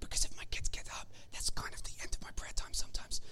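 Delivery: soft, fast whisper. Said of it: "I'm gonna whisper 'cause I don't wanna wake my kids up".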